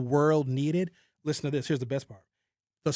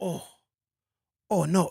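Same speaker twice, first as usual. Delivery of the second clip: put-on Japanese accent; 2 semitones higher than usual. Retelling japan's reaction after the first nuclear bomb, japanese accent. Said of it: "I shouldn't do a Japanese accent".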